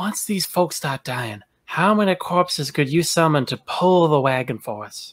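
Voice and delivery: hushed, half-whispered voice. A character looks down at a fellow character and asks him: half-whispering. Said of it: "I'm gonna whisper".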